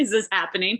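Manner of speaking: plain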